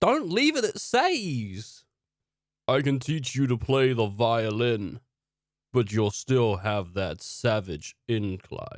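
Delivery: monster creature speaking voice. A game narrator speaks as a creature addressing a player, in a creature voice. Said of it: "The creature looks at you and says".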